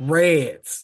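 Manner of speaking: Australian accent. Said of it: "You gotta say it".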